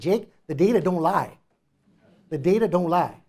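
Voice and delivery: loud, attempted, put-on Louisiana accent. Quoting an old mentor from Louisiana, in an attempted Louisiana accent. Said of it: "maybe that's not a Louisiana accent".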